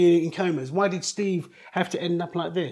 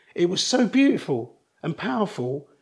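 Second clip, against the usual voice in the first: slow, heartfelt, emotional, deeply moved. Describing the powerful feeling after the coma: getting emotional. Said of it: "now it's gonna make me get emotional saying it".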